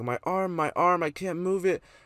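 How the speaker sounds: put-on injured child screaming, high and drawn-out. Retelling what a hurt kid screamed after falling, imitating a kid screaming. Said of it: "And he starts screaming".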